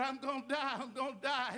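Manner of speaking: ordinary talk, nothing marked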